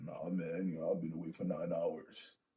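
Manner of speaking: put-on just-woke-up sleepy voice. Acting out a sleepy-sounding man answering a question: put-on just-woke-up voice. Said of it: "did you just wake up?".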